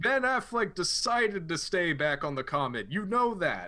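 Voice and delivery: loud, high-pitched hollering. Playing a character who answers the wounded Nemesis: Bruce shouting back. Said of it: "Bruce shouts back".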